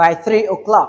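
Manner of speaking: ordinary talk, nothing marked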